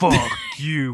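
deep, put-on bass voice, dropped low. Joking about someone acting possessed, voicing a line: put-on deep voice. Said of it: "With a deep voice".

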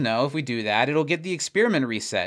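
ordinary talk, nothing marked

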